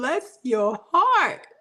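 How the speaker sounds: Southern-accented voice. Reacting to hearing that someone's youngest is five: Southern voice. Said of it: "in my Southern voice".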